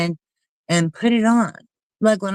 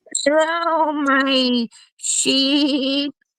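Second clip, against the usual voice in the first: high sheep voice with "my" drawn out; 7 semitones higher than usual. Trying out how Merv should talk, the speaker does a sheep voice. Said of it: "I'm trying to talk like a sheep".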